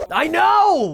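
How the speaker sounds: thrilled. Agreeing that the Crash Easter egg was cool, excited.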